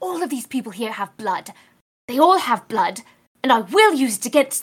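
whispered voice. A character insisting they are scary whispers to Algernon: whisper. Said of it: "I'm whispering to Algernon".

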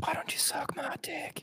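hushed whisper. Joking back and forth with another speaker, whispering. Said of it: "We'll just do the whole podcast whispering".

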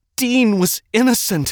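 very high-pitched, shrill yelling. In a tunnel, a woman yells back at a man who threatens her. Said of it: "the woman yelled".

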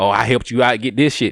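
ordinary talk

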